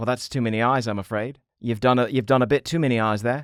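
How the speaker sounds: put-on New Zealand accent. Commenting on a drawing that has too many eyes: New Zealand accent. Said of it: "You sound a little bit, uh, like a New Zealander".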